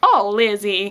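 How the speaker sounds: clumsy, bad, put-on American accent. An english viewer tries the accent used for a web-series mother, bad fake american accent. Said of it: "the accent she does for her mother".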